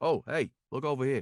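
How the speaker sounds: put-on New York accented speech. Acting out an audition reply after being asked: New Yorker accent. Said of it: "Can you do it like a New Yorker?".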